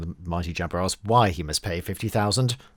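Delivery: normal talking voice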